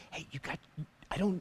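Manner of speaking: hushed, very quiet whisper. Retelling how a lady at church pointed out his tag: imitating a whisper. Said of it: "And she just whispered".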